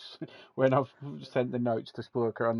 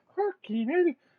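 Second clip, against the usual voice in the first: put-on Irish accent, pitched way up high; 3 dB louder than usual. Speaker imagines an astronaut floating past the window: irish accent. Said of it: "that was my Irish accent again".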